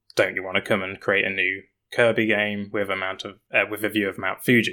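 normal talking voice

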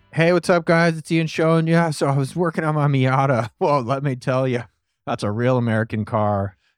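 teasing, joking put-on voice. Doing an impression of Ian for the interviewer: Ian impression. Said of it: "Go ahead and do your Ian impression".

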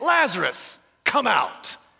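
authoritative, commanding call with swooping pitch. Retelling how he called lazarus out of the grave, retelling a loud call. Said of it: "said in a loud voice".

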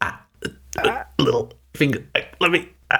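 fumbling, word-hunting stumble. Teasing a co-host about the episode number mix-up: imitating Jason fumbling for words. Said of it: "And Jason's just going".

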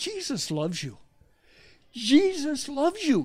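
acted fervent, drawn-out declaration. Retelling a stranger pointing from a car: imitating passionate speech. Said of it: "He said it with such passion".

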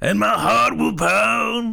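rough, slow, drawn-out swooping voice. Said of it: "That's a little [name]".

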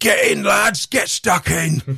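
very high-pitched, creaky, rough orc voice. Praising a voice actor's work, the speaker mimics the orcs: orc voice. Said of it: "orcs are hilarious to voice anyway".

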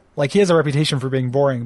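ordinary delivery

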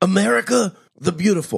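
bad put-on voice, very high and creaky. Joking about a charismatic, unattractive candidate: bad Bernie Sanders impression. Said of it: "I gotta work on my Sanders".

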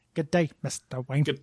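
put-on Australian accent. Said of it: "They're Australian".

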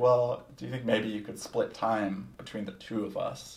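ordinary talk, nothing marked

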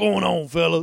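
very loud, booming and cheerful. Doing an impression on request of a caller to the show: Sean impression. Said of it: "Give me that Sean impression".

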